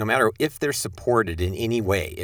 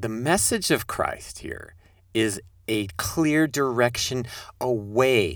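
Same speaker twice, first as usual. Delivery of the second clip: careful, measured, slow, deliberate, words drawn out; 3 semitones higher than usual. Speaker restating a point to listeners so it sinks in, slow and deliberate. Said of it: "I'm just going to say that slowly, carefully, deliberately".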